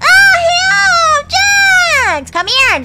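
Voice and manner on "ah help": screaming, high-pitched and loud. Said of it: "Stop screaming".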